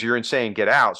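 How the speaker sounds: normal talking voice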